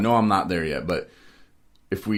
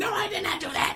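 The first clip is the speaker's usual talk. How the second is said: very high, mock yelling voice. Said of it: "she just starts yelling".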